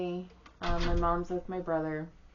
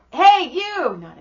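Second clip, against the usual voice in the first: put-on child voice calling out, high and loud.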